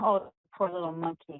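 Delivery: ordinary delivery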